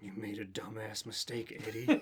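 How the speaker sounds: hushed, soft inner-monologue voice. Narrator reading a story voices Eddie's inner monologue, in a Venom voice. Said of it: "I don't like that voice".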